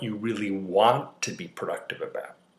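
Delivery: heavy stress on the word "want".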